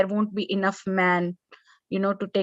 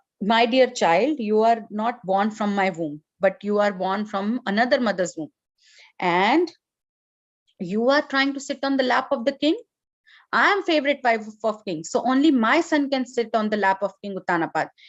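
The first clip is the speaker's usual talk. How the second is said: ordinary talk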